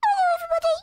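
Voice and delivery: high-pitched small voice. Playing a shrunken character in a game: high-pitched small voice. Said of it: "my voice slowly goes up in pitch".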